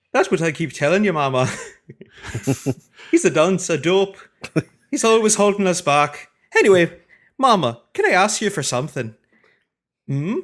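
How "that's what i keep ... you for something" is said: loud, high put-on Scottish accent. Reading a comic character's lines aloud to the group: scottish accent. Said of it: "I have to give him a Scottish accent".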